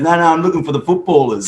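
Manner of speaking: put-on English accent. Recalling a new teammate at the stadium, quoting him imitating an english accent. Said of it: "with his English accent".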